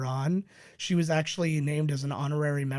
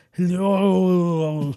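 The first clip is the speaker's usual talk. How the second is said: loud Austrian accent, end of "hello" drawn out; 3 semitones higher, 9 dB louder than usual. Explaining the key to a mediocre impression, greeting in Arnold Schwarzenegger accent. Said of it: "the key to a mediocre Arnold Schwarzenegger impression is multiple syllables on the last syllable of a word".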